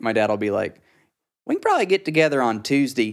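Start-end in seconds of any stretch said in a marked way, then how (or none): 1.5-3.1 squeezed, pinched, pitched-up voice. Speaker quotes the way their dad talks, imitating dad's pinched voice. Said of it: "kind of a more pinched version of that".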